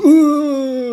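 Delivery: put-on high, loud obnoxious boy hoot. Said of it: "that stupid fucking boy laugh".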